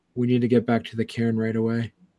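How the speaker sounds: hushed, barely audible character voice. The game master voicing Nana Boshar to the players, low hushed voice. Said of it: "she says low enough to just only you can hear it".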